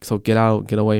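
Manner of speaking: exasperated, fed-up tone. Retelling telling a drunk stranger to leave: retelling fed-up words. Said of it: "fed up at this point".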